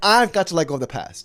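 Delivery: ordinary talk, nothing marked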